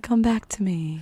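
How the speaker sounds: beckoning, luring voice. Voicing the moon in a painting, beckoning Esther: beckoning moon voice. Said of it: "just kind of beckoning".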